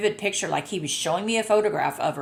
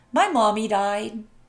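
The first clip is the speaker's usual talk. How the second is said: put-on small childlike little boy voice; 3 semitones higher, 3 dB louder than usual. Relaying what an animal said to the speaker in her head; little boy voice. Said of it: "He had a little boy voice".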